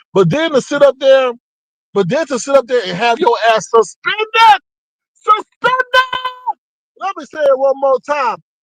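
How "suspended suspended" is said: full-throated scream, word screamed out. Repeating a word about someone's account for emphasis: screaming. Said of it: "I'm screaming".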